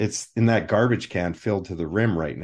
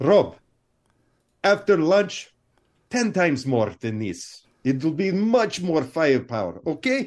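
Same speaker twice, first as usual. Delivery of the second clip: put-on thick Italian accent, laid on heavily, pitched up; 7 semitones higher than usual. Recounting being asked for more ammo, in Mario's heavy Italian accent. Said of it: "he came with a heavy Italian accent".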